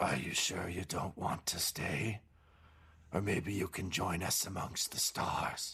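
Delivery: strangled, choked, gurgling voice through the words. Storyteller voicing a figure speaking from the shadows behind the player: choked, gurgling voice. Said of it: "you hear a choked voice behind you gurgle".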